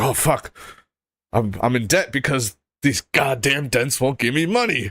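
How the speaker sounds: frazzled, bitter, stressed-out complaining with cursing. Imitating someone reacting to stress: mock stressed complaining. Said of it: "any stress, he is like".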